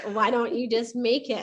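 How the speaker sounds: playful, joking tone. Recalling her reply when no planner suited their needs, retelling a joking suggestion. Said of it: "she jokingly said".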